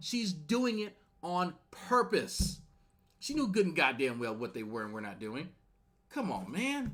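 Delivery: furious, high, angry screaming like a lunatic. Arguing with another man in a heated exchange, screaming angrily. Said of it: "why you're screaming like a lunatic".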